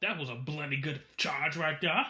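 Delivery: mediocre put-on Australian accent. Quoting a man who comes up to them, put-on Australian accent. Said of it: "in his Australian accent".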